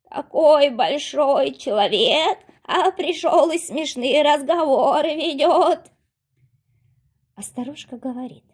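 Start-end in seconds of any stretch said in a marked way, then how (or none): 0.2-5.9 very loud, high, croaking talking-frog voice. Narrator reading the magic frog answering the hero, talking frog voice. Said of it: "а в кровати прыгает лягушка. Видно, непростая лягушка, на шее у нее ожерелье. / а в кровати прыгает лягушка. Видно, непростая лягушка, на шее у нее ожерелье. Лягушка заквакала и спрашивает [name]а: /".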